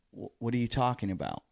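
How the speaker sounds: ordinary talk, nothing marked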